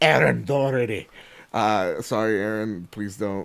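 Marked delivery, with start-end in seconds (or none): 0.0-1.1 horrible put-on Irish brogue. Reading out supporters' names to thank them: horrible Irish accent. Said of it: "I just did that horrible Irish accent".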